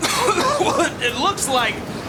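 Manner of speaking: words pushed out through repeated coughing fits.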